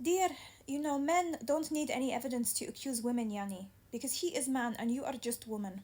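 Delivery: put-on Arabic accent throughout. Quoting what the court told them, in an arabic accent. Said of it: "I had to say it in an Arabic accent".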